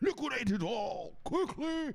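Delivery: put-on very high, slow old rich man voice. Speaker acting out rich people with billions in Enron: old rich man voice. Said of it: "That's my old man rich guy voice".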